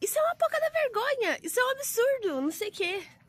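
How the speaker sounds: very high-pitched grandmother voice. Retelling a grandma's reply about bikinis at the beach: imitating the grandma talking. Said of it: "Falando assim".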